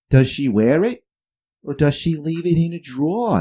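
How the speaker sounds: put-on over-the-top New England accent. Retelling what an old watch repairman asked: imitating a crazy new england accent. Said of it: "That's how he's talking. Crazy New England accent".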